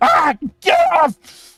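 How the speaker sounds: very high, shrill, swooping, agonized screaming yell. Voicing a burning man who screams: NPC screaming in pain. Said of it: "he screams. He's like".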